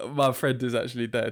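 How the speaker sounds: ordinary delivery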